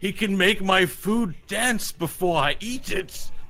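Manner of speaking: high-pitched giant cyclops character voice. In a roleplaying game, the giant cyclops answers a question; giant cyclops voice. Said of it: "giant Cyclops".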